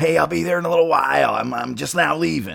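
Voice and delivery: put-on raspy, gravelly voice. Retelling a phone call about an airport pickup, imitating Chris's raspy, gravelly voice. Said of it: "that raspy, gravelly voice".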